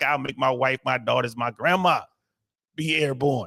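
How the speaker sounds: put-on Southern drawl. Speaker retells what a man once said, imitating a southern drawl. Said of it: "He had that Southern drawl".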